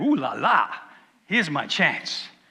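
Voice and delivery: slow, smitten, moonstruck, lovestruck delivery. Retelling a man seeing a beautiful woman coming: lovestruck Jacob. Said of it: "he's got these love hearts appear in his eyes".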